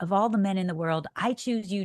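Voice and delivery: ordinary talk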